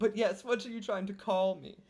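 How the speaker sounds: put-on high, snooty, posh rich society lady voice. Pretending to phone a rich friend for investment: put-on rich lady voice. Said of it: "Madame Pimbleton Von Twiddlesticks".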